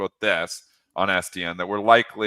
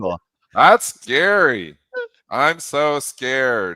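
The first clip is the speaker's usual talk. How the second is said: drawn-out, sarcastic, fake fright, pitched up; 5 semitones higher, 5 dB louder than usual. Reacting to a news headline about the market: sarcastic mock fear. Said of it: "a suggestion of sarcasm here".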